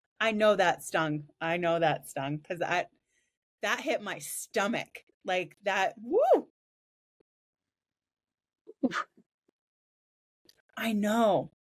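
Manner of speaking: close to tears, choking up. Telling another speaker that a remark stung: close to tears. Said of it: "I'm gonna cry".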